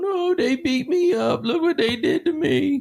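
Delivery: put-on very high, slow whimpering blubber like a little baby. Retelling how a suspect cried after his arrest: imitating Markeith crying like a baby. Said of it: "he comes out crying like a little baby".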